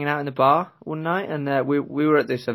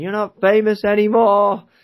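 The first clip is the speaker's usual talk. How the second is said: put-on high, loud tipsy drunken shout; 7 semitones higher, 5 dB louder than usual. Retelling what a classmate shouted after a few drinks at the free bar, retelling a shout. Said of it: "starts shouting".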